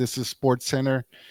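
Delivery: ordinary talk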